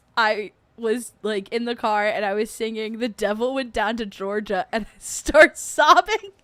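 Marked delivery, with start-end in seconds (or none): none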